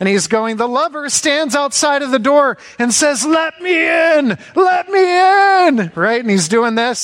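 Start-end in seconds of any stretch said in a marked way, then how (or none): 0.6-5.9 acted, gushing fervour, pitched up, "me" drawn out. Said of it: "he's just all into it".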